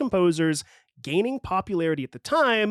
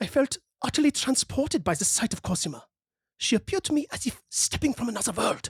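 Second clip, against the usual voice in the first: put-on German accent, pitched up; 6 semitones higher than usual. Quoting what Wagner later wrote about Cosima, as Wagner with a put-on German accent. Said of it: "That's my best German impression".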